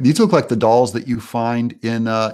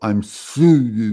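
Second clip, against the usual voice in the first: put-on voice struggling to get words out. Retelling how the Fonz tried to apologize to Richie: Fonz unable to say sorry. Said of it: "He cannot use, form the words, "I'm sorry," so he'd go".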